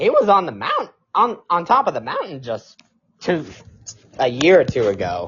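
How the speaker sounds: very loud, voice breaking mid-line. Talking about Dan Hurley's down season; voice cracking. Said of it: "Great voice crack".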